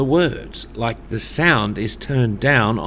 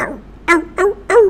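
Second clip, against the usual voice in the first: very high yapping puppy dog voice; 4 dB louder than usual. Leading a group vocal exercise, demonstrating a puppy dog sound. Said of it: "Another one you might do is a puppy dog, like".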